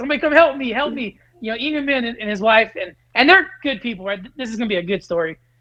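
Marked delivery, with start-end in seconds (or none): 0.0-1.2 acted-out yelling, much higher pitch. Telling a story about a rooster while in a cage: retelling a yell for help. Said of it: "Like yelling".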